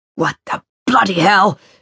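snarled, startled outburst. A man glares up at a woman who yelled from the railing; snarling. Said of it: "he snarled".

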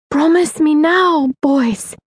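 high, tight, strained voice. Grandfather urging his grandsons to promise during a bombing: high, strained voice. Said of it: "His voice was high with strain".

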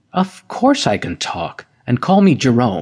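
ordinary delivery, nothing marked

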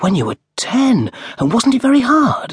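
very high, swooping, wondering dismay. A narrator reads a woman's question to a miner, in wondering dismay. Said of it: "She looked at him in wondering dismay".

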